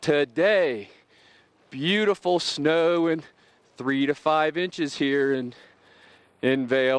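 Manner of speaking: talking while catching breath, winded, out of breath. Presenting the weather forecast in Vail, a little out of breath. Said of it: "a little out of breath".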